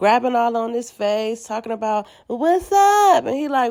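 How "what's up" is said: put-on drunk woman slurring, higher. Retelling a drunk woman grabbing his face: imitating Krishan slurring drunk. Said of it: "she's slurring her words".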